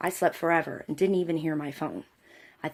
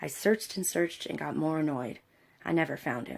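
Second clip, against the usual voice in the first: ordinary talk, nothing marked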